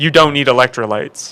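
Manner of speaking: normal talking voice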